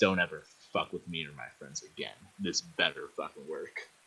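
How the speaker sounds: very quiet half-whisper, close to the ear. Treating a companion's wounds in a game, half-whispering in his ear: half-whispering a threat. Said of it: "I'm gonna whisper in his ear".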